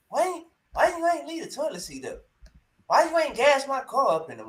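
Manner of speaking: high, sing-song, nagging complaint. Mocking a man's way of talking, imitating him sounding a little female. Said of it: "he sound like a little, a little female".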